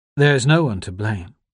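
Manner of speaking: plain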